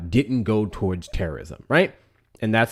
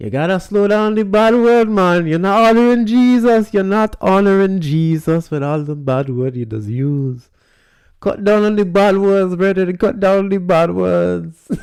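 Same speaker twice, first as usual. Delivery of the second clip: put-on Caribbean accent, very high and loud; 10 semitones higher, 7 dB louder than usual. Speaker quotes his mother, who heard him live: imitating mom's Caribbean accent. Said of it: "Let me try and do an accent".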